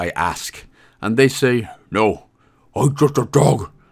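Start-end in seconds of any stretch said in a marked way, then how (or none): 1.9-3.6 goofy, silly put-on cartoon dog voice. Game guide voicing a character's reply, silly dog voice. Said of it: "let's stop doing silly voices now".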